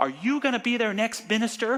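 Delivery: loud, very high-pitched call-out. Retelling a minister calling out a question to a student: imitating someone saying it loudly. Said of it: "really loud".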